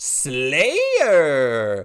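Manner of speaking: swooping, drawn-out game announcer call, word stretched. Retelling how the Halo announcer said Slayer: Halo announcer with Pauly Shore cadence. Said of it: "he had the cadence of, like, Pauly Shore".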